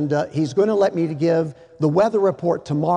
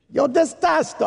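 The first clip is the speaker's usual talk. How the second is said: put-on Italian-sounding accent, pitched up; 9 semitones higher than usual. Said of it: "I sounded like an Italian".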